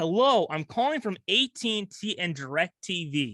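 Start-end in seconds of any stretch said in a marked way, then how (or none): none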